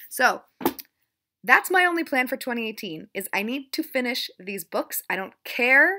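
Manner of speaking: increasingly aggressive, loud delivery. Talking about your reading plans for the year, getting kind of aggressive. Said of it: "Sorry, I'm getting kind of aggressive".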